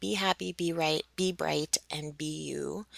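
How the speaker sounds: ordinary delivery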